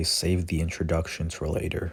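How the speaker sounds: normal talking voice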